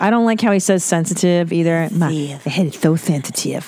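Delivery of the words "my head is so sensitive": mock lisp, lower and slower. Repeating a man's line to mock how he says it, imitating his lisp. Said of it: "he's got a bit of a lisp".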